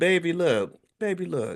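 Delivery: put-on high, slow, sweet baby voice. Retelling an Instagram statement by Tabitha Brown, the speaker imitates her sweet baby voice. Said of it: "in her sweet baby voice".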